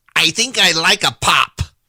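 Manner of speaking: put-on slow northern US Yankee accent. Retelling a Southerner's impression of a Northerner: Northerner impression. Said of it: "his impression is".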